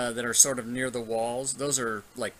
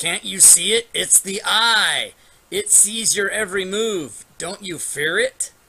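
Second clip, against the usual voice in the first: slow, loud, high, drawn-out yell; 7 semitones higher, 8 dB louder than usual. Voicing a hidden voice behind a curtain, warning about an eye: yelling voice.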